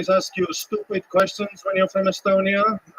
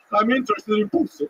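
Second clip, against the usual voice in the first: put-on creepy vampire voice, pitched up; 5 semitones higher than usual. Describing walking up to someone at a bar, speaking in a vampire voice. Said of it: "I sound like a vampire".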